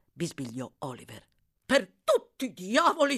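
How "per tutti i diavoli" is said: loud, high-pitched yelling. The doctor cries out in the carriage after Oliver speaks, shouting. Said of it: "gridò il medico".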